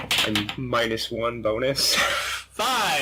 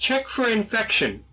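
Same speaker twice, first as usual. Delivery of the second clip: small, tiny, high-pitched little voice; 9 semitones higher than usual. Retelling how they spoke up to the group, in a high-pitched, soft little voice. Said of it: "high-pitched, soft little voice".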